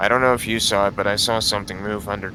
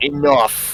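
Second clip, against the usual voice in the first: loud, high shout at full force; 6 semitones higher, 5 dB louder than usual. In a tabletop game, as tension rises, a player's character is shouting in Giant. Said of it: "Asmund kind of like shouts in giant".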